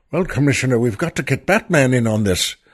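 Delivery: put-on very thick, laid-on Irish accent. Recalling an old Batman show, voicing the police chief addressing the commissioner, Chief O'Hara Irish accent. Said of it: "Chief O'Hara has a very thick Irish accent".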